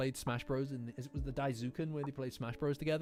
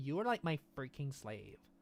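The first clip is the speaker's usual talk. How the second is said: put-on valley girl accent, quieter and slower. Speaker quoting what Ida said to them, Ida's Valley Girl accent. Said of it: "She's got like a Valley Girl accent".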